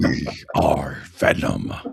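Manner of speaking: rough, creaky, raspy put-on character voice. Doing a voice from a special episode, Venom voice. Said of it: "I love to do an impression".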